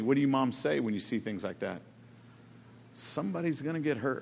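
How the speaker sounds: mock-calm tone. Speaker quoting what a stepmother would say, imitating a very calm tone. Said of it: "she would say very calmly".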